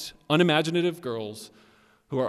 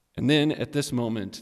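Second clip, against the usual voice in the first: normal talking voice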